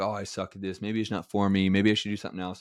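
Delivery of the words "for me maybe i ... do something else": ordinary talk, nothing marked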